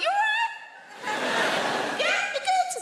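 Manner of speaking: voice pushed very high, slow and drawn out. Finding a guy on the sofa, the speaker retells greeting him in a high-pitched voice. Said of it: "when our voices go high like that".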